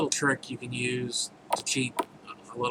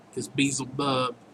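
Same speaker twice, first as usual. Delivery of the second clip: usual speaking voice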